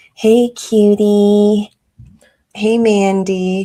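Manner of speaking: put-on baby talk, very slow and drawn-out. Asking another speaker about a trailer, quoting a couple's line: imitating baby talk. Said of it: "they talk like babies to each other".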